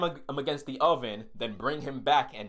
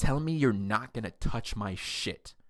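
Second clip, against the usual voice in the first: put-on whisper; 2 semitones lower than usual. Retelling a fight, quoting own words in a whisper. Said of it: "I said it just like that, in that, like, whisper".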